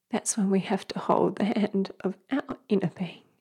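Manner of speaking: tearful half-whisper.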